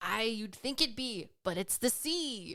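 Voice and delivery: sea-dog pirate character voice. Host telling a dad joke, delivering the punchline in a pirate impression. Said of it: "That's my best pirate impression".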